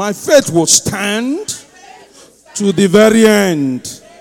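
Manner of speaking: loud, bold, fervent, emphatic delivery, end drawn out. Speaker shows the audience how they should say a line; loud declaration with conviction. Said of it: "Say it as if we are 1,000 in this place".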